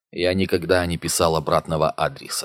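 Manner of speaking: ordinary delivery, nothing marked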